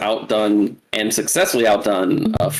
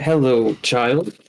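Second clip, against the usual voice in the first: calm, composed talking voice, no fuss. Narrator voicing a woman reaching for a spider, calm talk. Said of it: "calmly talk like".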